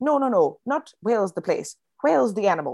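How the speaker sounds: put-on accent somewhere between Irish and Scottish. Describing their act, the speaker retells the partner's reply, in an accent between Irish and Scottish. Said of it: "He dons somewhere between Irish and Scottish".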